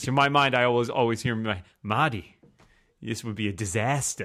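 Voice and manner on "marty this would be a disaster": put-on New Jersey accent. Recalling a film villain, speaker imitates Ben Kingsley's New Jersey accent. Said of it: "His his New Jersey accent is kind of hilarious".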